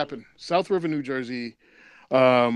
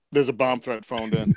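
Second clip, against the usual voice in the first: ordinary delivery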